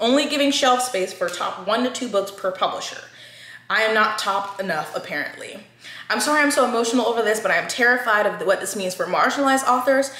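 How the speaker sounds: ordinary talk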